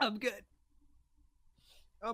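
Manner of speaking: voice right after choking. A podcaster answers the co-host asking if they're all right, just choked on a drink. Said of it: "my eyes are watering".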